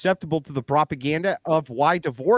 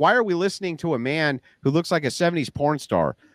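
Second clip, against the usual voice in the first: normal talking voice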